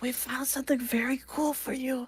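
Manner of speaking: quiet, hushed, secretive half-whisper under the breath. Speaking in character during the moot without interrupting it: half-whispering. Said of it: "whispering, 'cause, like, I don't wanna interrupt the moot".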